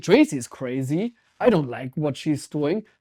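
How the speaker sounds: plain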